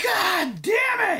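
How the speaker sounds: furious, livid, very high-pitched scream. Retelling someone screaming out in the crowd: imitating Mike Dell screaming. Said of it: "Mike Dell screaming".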